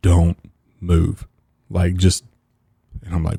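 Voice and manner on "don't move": put-on gravest voice, dead serious, no joking at all. Retelling a father's warning while fishing, imitating a very serious voice. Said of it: "in the most serious voice I've ever heard him use".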